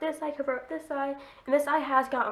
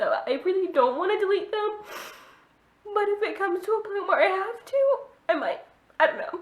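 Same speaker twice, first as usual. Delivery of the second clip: tearful crying speech, high and raised; 8 semitones higher, 5 dB louder than usual. Speaking to the audience about a first love, crying. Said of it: "I'm going to stop crying".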